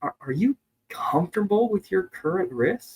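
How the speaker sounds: almost worried, curious tone. Showing how to follow up with a client, in a concerned tone. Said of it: "As if you're almost like concerned".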